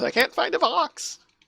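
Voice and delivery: high, panicked squeak. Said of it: "the more panicked one goes".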